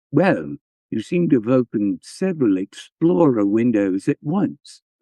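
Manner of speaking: exaggerated, posh upper-class English accent. Retelling what a man said when he came up, in a real posh British accent. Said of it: "he has that like real posh accent".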